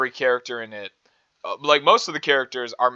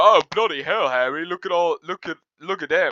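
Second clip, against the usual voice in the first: high, pitched-up, awestruck, tripping over words; 5 semitones higher than usual. Retelling how a character reacts to the visiting school: imitating Ron. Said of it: "Ron specifically, he's like".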